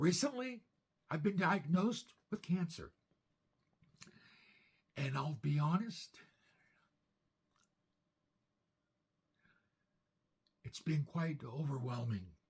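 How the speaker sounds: strained, breathy, effortful voice. Describing a cancer diagnosis in an old video: strained, breathy voice. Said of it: "my voice is so strained".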